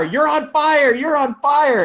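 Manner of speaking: very high, frantic, urgent shouting, yelling. Retelling a warning to a driver in a burning car: imitating own yelling. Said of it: "I remember yelling at you in the car".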